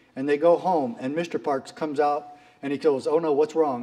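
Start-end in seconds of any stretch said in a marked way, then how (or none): none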